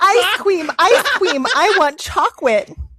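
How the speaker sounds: put-on excited, loud, high little-kid yelling. Reading a story where a grown husband jumps and yells like a kid: imitating a husband yelling like a kid. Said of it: "jumped up and down, yelling".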